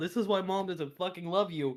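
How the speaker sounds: put-on loud yelled outburst in a child's voice. Retelling what a 4-year-old orc yelled before leaving, imitating a yelling 4-year-old. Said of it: "A 4-year-old orc yelled".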